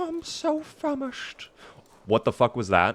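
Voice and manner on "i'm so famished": soft, breathy cartoon bear voice, breathed out softly. Speaker retries a line, unsure how the bear talks, in a Winnie the Pooh voice. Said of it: "Winnie the Pooh voice".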